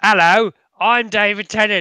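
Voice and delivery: very high, affected, put-on English accent. Answering a request for an english accent, put-on english accent. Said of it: "Give me your best English accent".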